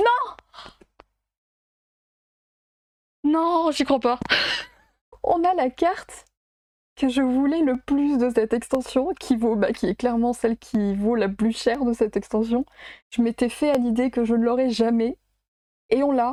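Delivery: close to tears with excitement, overwhelmed disbelief. Opening a booster and pulling the card the speaker wanted most: teary with emotion. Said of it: "j'ai les larmes aux yeux".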